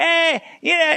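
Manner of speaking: dismissive eh, yeah. Showing how not to talk about a great fighter: imitating a dismissive "eh". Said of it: "Don't go".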